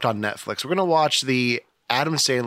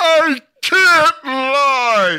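very high, loud wail with the word lie stretched out; 9 dB louder than usual. Describing a movie mashup idea: Jim Carrey voice. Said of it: "Jim Carrey from Liar Liar".

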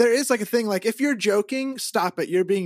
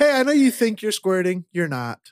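smug, condescending, patronising commercial announcer voice; 3 dB louder than usual. Acting out the made-up commercial again: smug commercial voice. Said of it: "That's the commercial".

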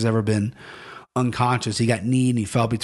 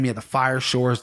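normal talking voice

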